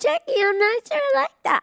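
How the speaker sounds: very high-pitched, put-on cartoon character voice. Speaker showing the voice she started doing for a character, in a put-on character voice. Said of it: "I just sort of started doing".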